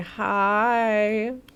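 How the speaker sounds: eerie, creepy voice. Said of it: "Why did I say that so creepy".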